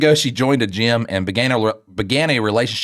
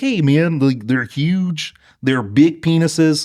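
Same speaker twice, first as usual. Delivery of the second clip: put-on cartoon frog puppet voice; 4 semitones higher than usual. Mimicking how the other speaker said his earlier line, in a Kermit the Frog voice. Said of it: "You were like".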